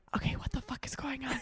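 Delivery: imitated whisper. Retelling a scared meeting with friends in the store, imitating a whisper. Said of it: "So all of us are whispering".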